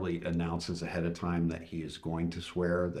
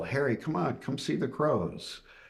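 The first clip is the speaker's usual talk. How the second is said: put-on raised yell, pitched higher; 9 semitones higher than usual. Retelling calling someone to the window to see crows: retelling own yell. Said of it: "I yell".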